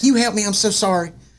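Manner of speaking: imitated, put-on Southern accent. Retelling what a frantic woman at the storm door said, imitating a southern accent. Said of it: "she's got a southern accent".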